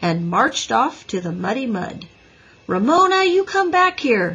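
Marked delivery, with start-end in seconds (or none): 2.7-4.4 very high-pitched, shrill yell. A traffic boy calls a girl back as she marches off into the mud: yelling. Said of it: "yelled Henry".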